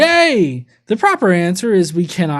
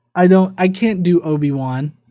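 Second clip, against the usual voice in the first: usual speaking voice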